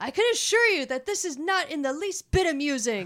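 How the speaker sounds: expressive, proper-sounding yelled outburst with plenty of inflection. Sharing a favorite line from the guy in the subway: retelling a yelled-out line. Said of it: "And he just yells out".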